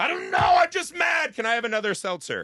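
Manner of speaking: shrill, high, loud, swooping, sing-song grumble. Mocking a liberal at a dinner table: imitating a mad liberal. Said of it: "every fucking liberal you've ever had dinner with who's like".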